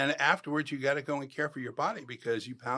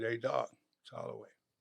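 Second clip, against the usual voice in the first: soft, low, murmured voice. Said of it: "talk right behind their ear".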